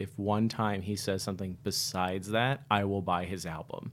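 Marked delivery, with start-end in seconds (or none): none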